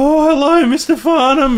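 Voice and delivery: affected squeaky voice. Retelling greeting a man who walked in, squeaky voice like The Simpsons guy. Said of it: "Squeaky voice".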